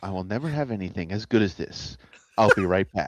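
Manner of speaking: public radio announcer voice. Imitating a friend's words with an NPR sign-off voice. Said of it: "with a very, like, N P R sign off".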